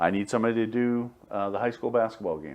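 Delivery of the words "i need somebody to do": usual speaking voice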